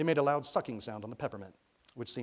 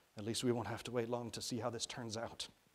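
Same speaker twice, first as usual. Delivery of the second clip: plain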